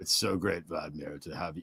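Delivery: very low, quiet, sedated-sounding droning murmur. Mocking how Trump sounded the whole time, sedated Trump impression. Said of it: "sounded like he was on benzos the whole time".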